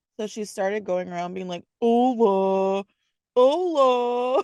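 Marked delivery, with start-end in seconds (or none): 1.8-4.5 mock very deep, silly, funny voice. Retelling how someone acts when trying to be funny, imitating a silly very deep voice. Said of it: "she goes into like a very deep voice".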